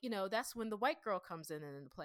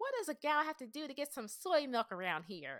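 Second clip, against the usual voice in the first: put-on generic girl voice, pitched up; 6 semitones higher, 3 dB louder than usual. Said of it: "I'm doing a generic voice, but that's kind of what the girl kind of sounds like".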